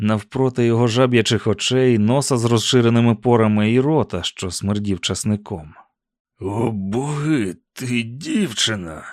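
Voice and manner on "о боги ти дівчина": very slow, hushed half-whisper, боги drawn out. Sheriff Avery, face to face with Susan after knocking her down, half-whispering. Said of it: "прошепотів він".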